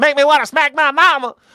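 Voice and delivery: put-on booming, shrill, very high and loud South Carolina accent. Imitating a friend from South Carolina: imitating a South Carolina friend's accent. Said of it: "He always talked like that".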